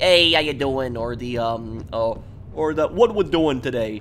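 Italian-flavoured New York accent. Explaining what people think the New York accent sounds like, Italian New York accent. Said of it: "people think that only Italian New Yorkers talk like that".

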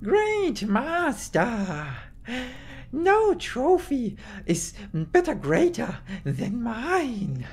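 very high, very slow, drawn-out swooping hiss. Narrator reads a character's boast to his master before the throne, hissed. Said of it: "The Stabstrik Deathmaster hissed".

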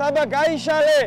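high, loud call carrying across water.

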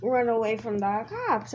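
ordinary talk

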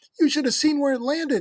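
very high, shrill squeaky exclamation. Robbie comes back around the side of the house, squeaking. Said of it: "squeaked Robbie".

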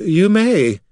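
feeble, weak, very high-pitched voice. A character gives a faint reply to a companion's suggestion, agreeing with little energy. Say it weakly. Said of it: "Corrin agreed weakly".

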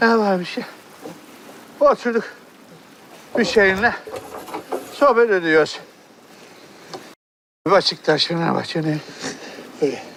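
breathless and panting, out of breath. In a drama, a character answers what they are doing, out of breath. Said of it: "Siz niye böyle nefes nefesesiniz?".

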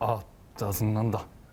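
low, deep put-on voice, pressed down heavily. Doing an impression the others call very similar, low, deep put-on voice. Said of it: "목소리를 좀 깔아야 돼요".

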